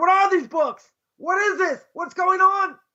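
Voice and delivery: high-pitched, screamed-out outcry. Retelling a dream in which someone screams about books: imitating someone screaming. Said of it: "the Netziv screams out".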